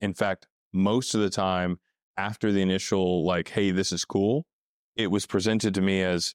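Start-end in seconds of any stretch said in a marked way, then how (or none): none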